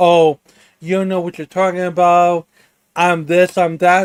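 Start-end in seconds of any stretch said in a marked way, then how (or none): none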